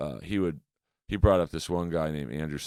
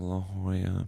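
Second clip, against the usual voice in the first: put-on meek tone, higher; 4 semitones higher than usual. Retelling how a bombing young comic answered a question after leaving the stage: imitating a meek reply. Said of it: "really meekly was like".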